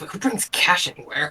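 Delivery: soft, mumbled, muttered under the breath. Playing a character walking over to hand over money: mumbling. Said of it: "mumbling out".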